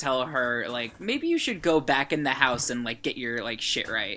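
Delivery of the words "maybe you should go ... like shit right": usual speaking voice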